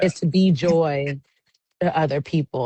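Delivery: ordinary talk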